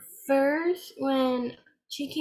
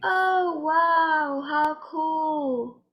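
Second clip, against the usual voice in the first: mock sarcastic tone; 2 semitones higher than usual. Showing how someone sounds who doesn't care: imitating a sarcastic reply. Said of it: "Being sarcastic is like".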